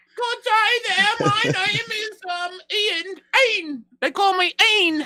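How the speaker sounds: put-on English accent, very high-pitched. Joking around in a group, introducing oneself in a fake english accent. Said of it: "Is that your English voice?".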